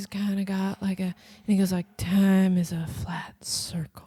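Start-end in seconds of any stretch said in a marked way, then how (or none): 2.0-3.9 very slow, lilting delivery. Quoting a True Detective line: Matthew McConaughey impression with a lilt. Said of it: "a lilt, I would say, to his voice".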